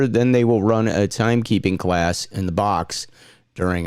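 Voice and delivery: ordinary delivery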